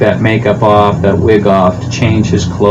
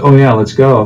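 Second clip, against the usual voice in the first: ordinary delivery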